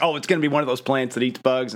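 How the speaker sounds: plain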